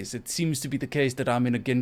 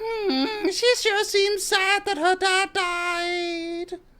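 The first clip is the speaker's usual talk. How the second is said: very high, very slow shrill voice, died drawn out. Complaining about a game companion interrupting a sad scene, shrill high-pitched Paimon voice. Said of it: "in her shrill, like super super high pitched voice".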